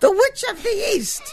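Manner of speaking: very high, shrill witchy falsetto. A masked mother answers a reporter's question on screen in her shrill falsetto. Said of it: "said my mother in her shrill falsetto".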